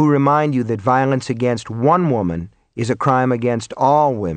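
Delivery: ordinary delivery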